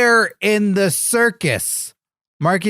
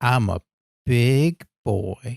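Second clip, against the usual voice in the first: very low, deep, creepy put-on voice; 8 semitones lower, 3 dB quieter than usual. Competing to see whose version sounds creepier, creepy voice. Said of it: "it's just like creepy".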